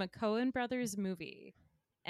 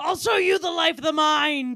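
shouted movie-character voice, much louder; 8 semitones higher, 16 dB louder than usual. Doing a film character's line for friends to guess, in a yelling film character voice. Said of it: "I'm going to be doing the voice".

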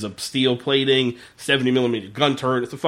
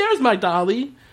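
put-on very high small child's, little girl's voice; 11 semitones higher than usual. Retelling a movie scene, imitating the daughter in a little girl's voice. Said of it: "I'm pretty good impression of the girl".

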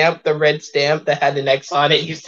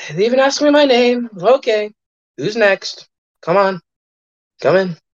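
weary, sighing, higher pitch; 5 semitones higher than usual. Playing a man who sighs and calls the next person in: sighing, weary. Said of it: "he sighs and he goes".

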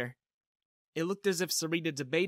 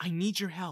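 usual speaking voice

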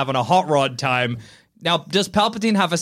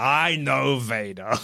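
put-on villain voice; 2 semitones lower, 3 dB quieter than usual. Acting out Palpatine speaking to the camera: Palpatine voice. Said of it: "Palpatine looks at the camera and he's like".

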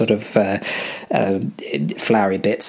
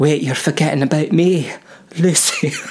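put-on Scottish accent, pitched up higher; 6 semitones higher than usual. Voicing the character Lucy in a scene with the others, Lucy's Scottish accent. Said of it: "my Lucy voice".

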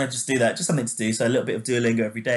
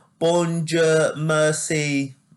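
put-on higher-pitched French with an English accent. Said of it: "English people speaking, you know, speaking French".

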